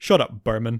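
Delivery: acted scornful, dismissive, loud and contemptuous tone. Retelling a character's reply to a school friend: imitating contempt. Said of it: "real contempt in his voice".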